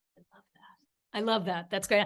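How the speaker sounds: hushed soft whisper. Listener reacting to someone's plan to write a novel, whispering. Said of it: "I'm sorry, I'm whispering".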